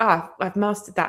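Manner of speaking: normal talking voice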